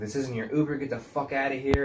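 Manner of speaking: fed-up, pissed-off, telling-off tone. Retelling how the uber driver told a drunk stranger off: imitating an angry uber driver. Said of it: "our Uber's getting pissed".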